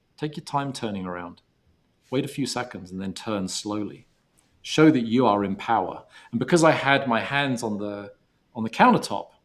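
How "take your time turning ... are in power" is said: plain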